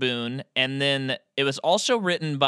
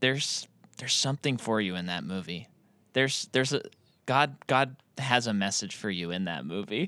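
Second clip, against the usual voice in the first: put-on very serious tone, lower and quieter; 4 semitones lower, 5 dB quieter than usual. Retelling what a woman asked a friend: imitating someone very serious. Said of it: "she got very serious".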